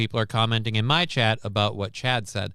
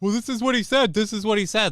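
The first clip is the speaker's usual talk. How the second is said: high, mocking chatter voice. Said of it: "people keep going".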